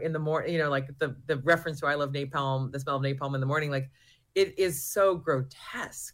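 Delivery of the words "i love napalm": ordinary delivery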